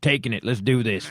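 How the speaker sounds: mock aggressive Texan character voice. Acting out a penis from Texas: mock aggressive Texan penis voice. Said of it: "and obviously just aggressive".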